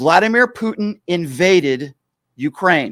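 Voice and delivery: very slow, every word distinctly enunciated. Speaking to the MAGA friends out there: very slow and distinct. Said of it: "now I'm going to speak very slowly and distinctly".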